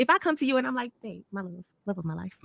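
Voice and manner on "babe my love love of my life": soft, gentle, much quieter delivery. Showing the other person how they would approach them, speaking softly. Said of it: "I'm speaking to you softly".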